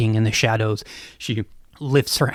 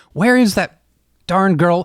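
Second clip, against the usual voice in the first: raised, higher, distracted voice; 8 semitones higher, 4 dB louder than usual. Storyteller voicing a distracted man looking for a girl, now a bit louder. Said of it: "a bit louder this time".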